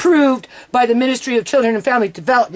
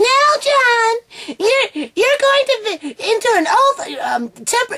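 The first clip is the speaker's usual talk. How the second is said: screechy put-on British accent, very high pitch; 12 semitones higher than usual. Retelling a social worker's words to John, in a screechy British accent. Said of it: "screechy freaking social worker with the British accent".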